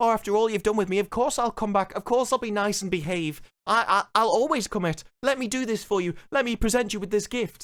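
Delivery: begging, pleading voice. Recapping a show, the speaker acts out a character begging the aliens; mock-pleading. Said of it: "So now she's pleading with them".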